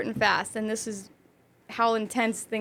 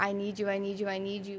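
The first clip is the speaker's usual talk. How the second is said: mock, desperate, repeated begging; 2 semitones lower, 9 dB quieter than usual. Retelling an ex's FaceTime call: imitating someone begging. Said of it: "he was begging me, like, begging me".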